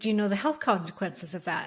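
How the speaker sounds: ordinary delivery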